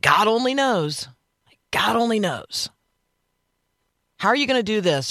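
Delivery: high, exasperated, fed-up complaining tone. Showing listeners how people ordinarily say the phrase, in an exasperated tone. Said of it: "ordinarily in an exasperated tone".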